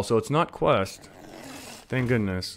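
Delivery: low, soft, odd hushed voice. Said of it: "don't know why I'm talking like this".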